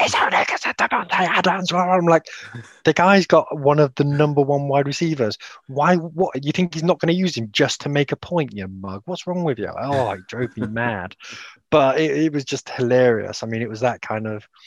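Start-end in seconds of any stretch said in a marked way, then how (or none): 0.0-1.7 put-on, pitched-up, angry ranting cry. Recounting a football fan's rant, retelling a scream. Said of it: "the guy was literally screaming".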